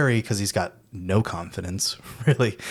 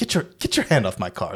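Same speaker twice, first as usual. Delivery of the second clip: put-on dismissive theater actor voice. Retelling a scene with a dismissive theater actor: dismissive theatrical Peter Vincent voice. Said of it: "it's just so dismissive of him".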